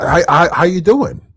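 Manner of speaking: patronizing, condescending, talking-down tone. Mocking a guest's question from a clip: mock condescending tone. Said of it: "That condescending shit right there".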